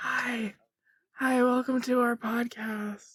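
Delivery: quiet whispering. Opening a joke ASMR podcast with the co-hosts, whispering. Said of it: "We're gonna start whispering".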